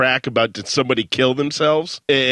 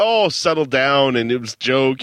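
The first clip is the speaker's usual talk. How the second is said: ordinary delivery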